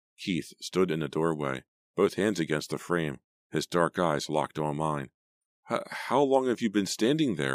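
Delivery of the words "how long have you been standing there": high, stumbling, halting, stammering voice. Turning to find him standing in the bedroom doorway, the narrator freezes and asks, stammering. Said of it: "I stammered".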